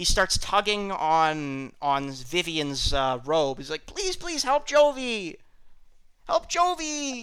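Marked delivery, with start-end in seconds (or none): 3.9-7.2 very high, frantic, panicked pleading and begging. Retelling a man's panic over a goat in labor, acting out someone begging. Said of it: "he's begging begging".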